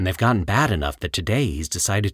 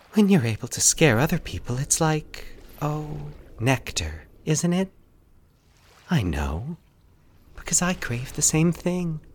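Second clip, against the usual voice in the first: soft, high-pitched cooing voice; 7 semitones higher than usual. A woman holding a man's knife speaks to him, cooing. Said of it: "She cooed".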